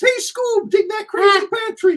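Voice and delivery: very high, squeaky cartoon voice. Showing how an Alan Rickman impression starts out, do a Shaggy voice sounding a bit like Mickey Mouse. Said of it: "sound like Mickey Mouse a little bit".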